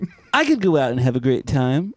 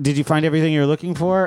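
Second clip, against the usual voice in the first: normal talking voice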